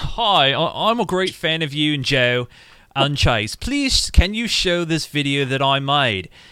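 put-on English accent. Reading a message aloud in a put-on English accent. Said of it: "I did read it in an English accent".

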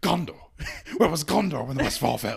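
furious, loud, rough, rasping angry outburst. Retelling a king's reply about gondor, imitating an angry outburst. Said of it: "he's so mad".

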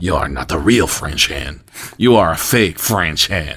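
put-on very deep, low hen voice with French accent. Acting out a hen from France scolding other hens: French hen from France. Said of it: "another French hen from France goes".

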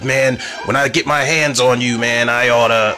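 empty, puffed-up, blustering tough-guy bravado. Mocking people who make threats when they are not in charge: mocking tough-guy threat. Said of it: "We are not in positions to talk shit".

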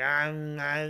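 put-on drunk speech. Retelling a phone call with a friend who couldn't talk: imitating Fixer drunk. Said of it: "he couldn't fucking talk. He was drunk".

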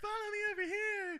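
put-on very high, whiny small child's voice. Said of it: "so just keep up that voice".

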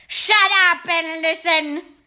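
sharp, loud, deliberate barked snap. The Grand High Witch silences her cheering witches; snapped. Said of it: "Snapped the Grand High Witch".

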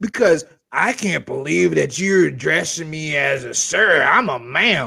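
put-on angry voice. Retelling a phone call with a caller who got upset, imitating an angry caller. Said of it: "Got pissed off at me".

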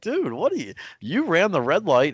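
high, incredulous, disbelieving call-out tone.

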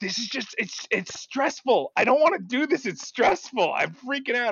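high, overwhelmed, freaking-out, stressed-out fretting. Retelling a partner's complaint while playing Tarkov: imitating his girlfriend, freaking out. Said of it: "she's like".

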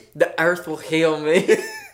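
sudden, put-on southern US accent. Playing a patient answering a doctor in a comedy bit: southern accent. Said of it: "I don't know why I'm doing a southern accent".

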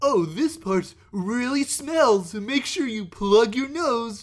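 put-on goofy kids' host patter, high and loud. Imitating a toy-review video maker who talks to kids: imitating a goofy toy reviewer. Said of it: "And he's just like".

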